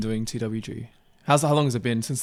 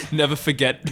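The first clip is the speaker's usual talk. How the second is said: usual speaking voice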